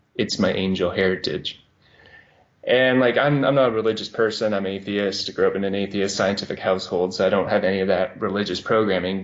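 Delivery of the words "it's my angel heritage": mock completely serious, level, flat deadpan monotone. Retelling a man's serious answer to how he did it, imitating a deadpan monotone. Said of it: "just completely serious and deadpan in a very like monotone voice".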